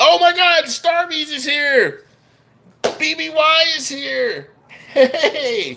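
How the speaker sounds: high, loud, thrilled, excited squealing shout.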